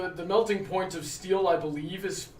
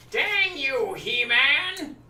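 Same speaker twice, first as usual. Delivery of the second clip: high, nasal, pinched, dragged-out villain voice; 7 semitones higher, 4 dB louder than usual. Showing how they voice Skeletor, a nasal Skeletor voice. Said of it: "with Skeletor, I try to be a little more nasally".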